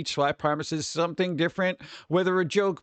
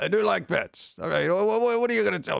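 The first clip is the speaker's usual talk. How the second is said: rough, creaky voice grinding the words. Acting out a movie scene where Watto is offered a bet: imitating Watto. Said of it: "And Watto's like".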